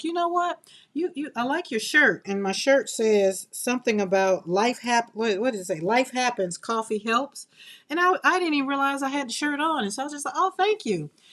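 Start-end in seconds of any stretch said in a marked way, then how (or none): 0.0-2.2 light, casual, pitched-up tone. Retelling what a young lady said to you, imitate her smiling compliment. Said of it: "she smiled at me and she's like".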